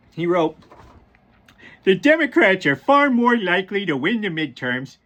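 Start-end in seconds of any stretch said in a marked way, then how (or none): 1.8-4.8 put-on goofy cartoon character voice, laid on. Reading aloud what Donald Trump wrote on Truth Social, Homer Simpson voice. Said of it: "in my best Homer Simpson voice".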